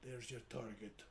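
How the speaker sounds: very quiet, hushed half-whisper. In a game scene, looking at a fellow character and pointing out the target, half-whispering. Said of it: "I kind of whisper to".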